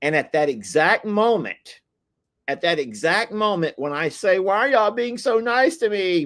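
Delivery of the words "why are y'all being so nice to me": put-on high crybaby voice, as if about to bawl. Retelling their own question to people in the fields, imitating a crybaby voice. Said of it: "Like in a in a crybaby kind of a voice".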